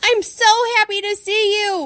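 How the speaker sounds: very high, barked-out words. A dog dashes to two returning people, barking the words. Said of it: "I bark".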